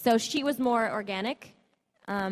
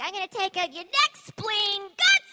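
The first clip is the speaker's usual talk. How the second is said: put-on very high, rising, unhinged crazed shouting; 11 semitones higher, 5 dB louder than usual. Retelling a line from a video game commercial: crazy Harley Quinn yelling.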